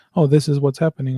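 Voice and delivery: plain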